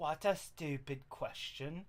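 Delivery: breathy, whispered put-on British accent. Trying out different accents on the same line, British accent. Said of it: "Make him make him British".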